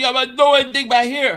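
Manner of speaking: very quick speech with words all run together. Imitating Nelson's catchphrase for the chat: imitating Nelson. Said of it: "He goes".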